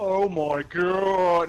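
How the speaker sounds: loud slow-motion drawl, "God" stretched out. Voicing a racer as a scythe flies over him: slow-motion voice. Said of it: "in slow motion".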